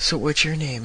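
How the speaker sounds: ordinary talk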